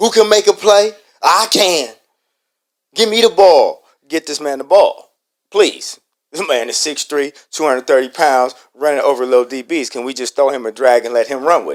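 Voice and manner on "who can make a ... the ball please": imitated screaming, loud yelling. Retelling a player screaming on the sideline: imitating t.o. screaming. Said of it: "he's screaming on the sideline".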